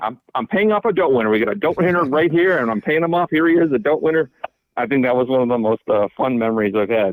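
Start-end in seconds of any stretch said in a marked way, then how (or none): 0.0-4.3 play-acted, brash, high, excited announcing shout. Retelling how the dealer pointed and announced the win: imitating the dealer shouting. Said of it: "started shouting".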